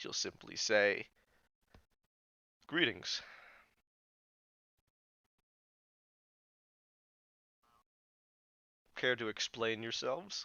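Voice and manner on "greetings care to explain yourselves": very quiet, kept soft throughout. Acting out how she'll greet them, in a very quiet voice. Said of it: "in a very quiet voice".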